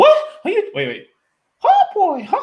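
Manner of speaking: squeaky, high voice with swooping pitch. Explaining which version of the character the speaker imitates: South Park Mickey Mouse voice. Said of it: "I do the South Park Mickey Mouse voice".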